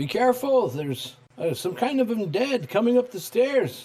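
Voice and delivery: very high rising call. Warning the group as his character that undead are coming: raised voice, calling out. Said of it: "raise his voice and say".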